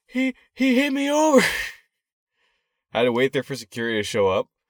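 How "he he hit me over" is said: shrill, very high, drawn-out wailing cry. Retelling a woman's reaction after his knee touched her shopping bag, retelling her screaming. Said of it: "starts screaming".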